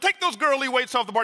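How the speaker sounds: loud, high, barked shouting, no inside voice. Retelling a man at the weights ordering him to lift: retelling a loud order. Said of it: "he says real loud".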